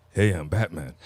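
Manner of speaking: plain, unchanged, normal speaking voice. Mocking an actor who used one voice for both roles: Val Kilmer impression. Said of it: "my dude didn't even change his voice".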